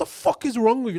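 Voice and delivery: very high, loud, offended-sounding yell. Retelling a coworker's reaction to his shaved head, imitating someone shouting. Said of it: "you're literally shouting at me".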